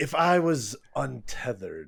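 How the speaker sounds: threatening, menacing tone. Voicing a character answering a question in a threatening tone. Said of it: "it was like a threatening tone".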